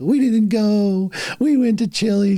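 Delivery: very high, slow, weepy, tearful blubbering. Retelling his wife's tearful answer to her mother: imitating someone crying. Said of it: "She's, like, crying".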